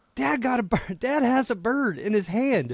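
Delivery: shrill, very high-pitched yell. Retelling the daughter announcing the caught bird, imitating Bobby Jean shouting. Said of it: "she shouts".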